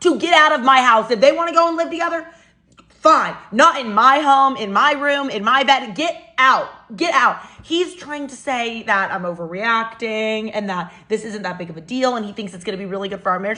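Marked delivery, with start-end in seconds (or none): 1.1-7.4 angry, furious yelling, voice very raised. Retelling ordering them out of her house, retelling her own yelling. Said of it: "My voice was very raised".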